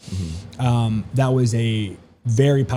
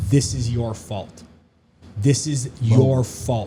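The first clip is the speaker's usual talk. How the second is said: acted-out stern, commanding, accusing, authoritative voice. Retelling an LSD vision of a voice over the burning earth: imitating a commanding voice. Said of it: "this voice so commanding said".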